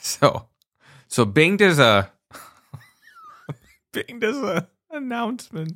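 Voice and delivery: very high, swooping, laughing through the words. Starting to describe a company's product announcement, laughing while talking. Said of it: "Sorry, I'm only laughing".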